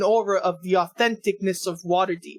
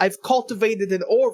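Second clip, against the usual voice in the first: ordinary delivery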